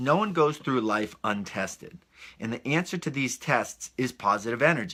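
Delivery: normal talking voice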